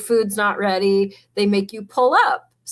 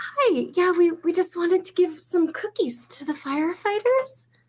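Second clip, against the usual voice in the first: woman's voice, pitched up; 9 semitones higher, 4 dB quieter than usual. Acting out women bringing cookies to the firefighters: imitating a woman bringing cookies. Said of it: "the women usually come in and".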